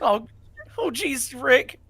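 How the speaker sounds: very high, loud, squeaky exclamation. In a group joking about a character's voice, the speaker does a Morty voice. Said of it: "Morty. That's Morty".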